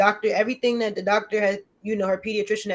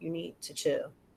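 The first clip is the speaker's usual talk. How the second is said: very quiet, low, hushed whisper; 4 semitones lower, 13 dB quieter than usual. Retelling how a child throwing a fit was calmed: imitating own whisper. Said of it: "And I whisper real low".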